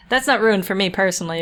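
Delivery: ordinary talk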